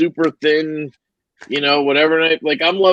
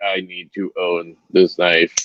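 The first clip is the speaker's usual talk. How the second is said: very low, flat robot voice in monotone; 10 semitones lower than usual. Retelling what he said after a five-minute talk about a knife, like a robot. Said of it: "that's kind of how I said it, like a robot".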